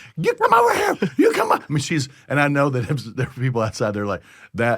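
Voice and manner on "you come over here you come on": acted, very high, frantic, shrill, raw screaming. Speaker retells a woman running after the kids, imitating someone screaming. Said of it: "she's screaming".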